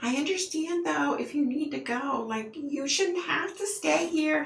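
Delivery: very high, over-the-top, fake-nice polite voice. Speaker imitating a woman who puts on a really high-pitched voice. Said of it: "She puts on this really high pitched voice".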